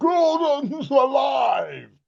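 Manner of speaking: enormous high call, "alive" drawn out. Imitating a guest's famous line in his enormous voice. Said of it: "he sounds just like he does when he's going".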